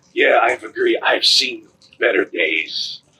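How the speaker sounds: raspy, rasped-out voice. Voicing Rainier, the group's long-lost ally, answering them, in Rainier's raspy voice. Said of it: "in this raspy voice".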